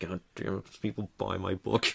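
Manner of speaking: put-on annoyed tone. Acting out a seller nobody is buying from, imitating someone all annoyed. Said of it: "sitting there like all annoyed".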